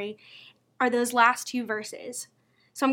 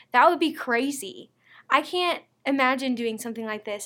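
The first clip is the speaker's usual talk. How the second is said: ordinary delivery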